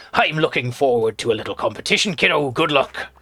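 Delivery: put-on old sea-dog pirate voice and accent. Voicing a sailor character met in Tiny Bookshop, in a pirate voice. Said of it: "that's enough of the pirate voice".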